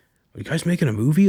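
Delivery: eager, thrilled, excited high-pitched voice. Retelling what a waiter asked the film crew: imitating an excited waiter. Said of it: "he was just super excited".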